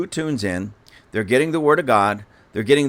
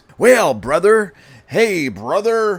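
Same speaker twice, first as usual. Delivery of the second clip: mock pious churchy tone, higher and louder; 7 semitones higher, 5 dB louder than usual. Retelling how a man suddenly switched to churchy talk: imitating put-on Christianese talk. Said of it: "he started turning on the Christianese".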